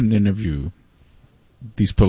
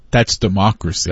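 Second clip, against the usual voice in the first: ordinary talk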